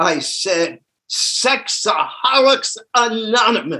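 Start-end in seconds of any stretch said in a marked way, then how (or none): 1.1-3.8 called out loudly. Retelling answering a man's question in front of many people, retelling a loud answer. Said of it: "And in a loud voice".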